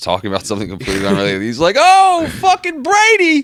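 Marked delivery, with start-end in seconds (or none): 1.8-3.4 very high, very loud, shrill yell. Doing an impression while describing him watching a football game: Bill Burr impression. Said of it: "your impression right there".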